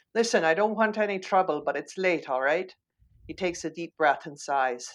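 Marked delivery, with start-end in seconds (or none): 0.2-2.8 poorly done put-on Irish accent. Daniel moves closer to the silent kid and tries again, bad Irish accent. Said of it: "This is where I do my really bad Irish accent".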